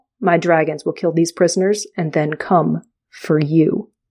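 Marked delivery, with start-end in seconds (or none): none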